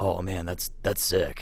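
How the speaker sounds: put-on California dude voice. Retelling showing someone guitar licks, doing a Jared impersonation. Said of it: "that's my best Jared impersonation".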